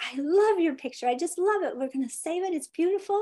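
high, forced, mock super cheerful voice. Retelling praise for a daughter's family drawing: retelling own super happy voice. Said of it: "I tried to keep a super happy voice".

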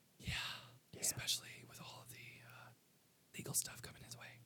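hushed whisper, barely voiced. Commenting on the legal trouble coming his way, whispering. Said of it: "Why are you whispering?".

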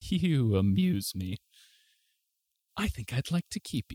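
amused, toying, snickering red dragon voice. Game master voicing a red dragon speaking to a bard, amused red dragon voice. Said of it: "Important to note that it is a red dragon that you see sleeping upon this bed of coins".

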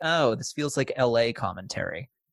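ordinary talk

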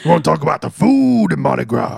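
thick, rough, creaky gravelly voice, ground out. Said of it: "I can't take you seriously like that".

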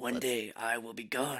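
put-on smoky Zen master voice. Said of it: "Zen master-ish".

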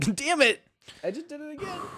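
very high voice with words breaking up in giggles. Apologizing for a noise on the mic, laughing while talking. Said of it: "It's 'cause I'm laughing".

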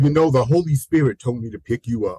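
plain

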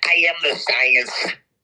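low, very slow New York voice. Quoting a public health official's line in a put-on voice: Fauci voice. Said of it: "I'll do my Fauci voice".

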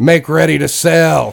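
high, called-out, commanding tone. Voicing a ship captain giving orders: NPC yelling an order. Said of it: "Then he yells".

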